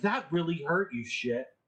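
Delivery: sarcasm pushed through audible hurt, pained. Voicing a punched character who spins and comes back up: sarcastic through the pain. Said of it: "emoting a little bit of sarcasm through the pain".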